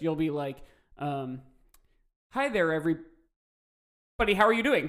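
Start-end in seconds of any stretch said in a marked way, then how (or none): 2.3-4.9 loud, choppy, glitchy robot voice, cutting out. Showing how the call's intermittent delay makes the other speaker sound: imitating a glitchy robotic voice. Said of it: "it'll sound like this".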